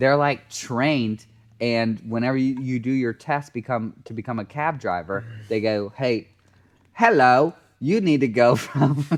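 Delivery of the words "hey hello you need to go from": clumsy, bad put-on English accent. Retelling what examiners say in the cab driver test, in a bad English accent. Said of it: "I did an accent".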